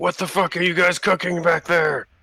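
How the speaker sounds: yelling orc voice. Game master voicing an orc who looks back at the kitchen: yelling orc. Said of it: "starts yelling and something in Orcish".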